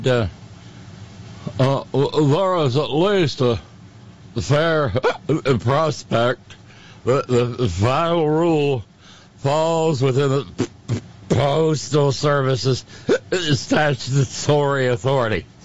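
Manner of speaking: silly, put-on, mock-drunk voice. Quoting a court concurrence aloud, in a silly drunken voice. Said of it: "without the silly drunken voice".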